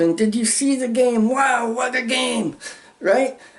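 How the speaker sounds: really keyed-up excitement, pitched high. Speaker acts out an excited person talking about a game: really keyed up. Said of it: "I mean really keyed up".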